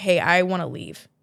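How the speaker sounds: plain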